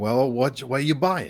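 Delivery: put-on elderly man character voice. Voicing an old man asking a player about pots: voicing an old man. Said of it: "an old man kinda comes down the stairs".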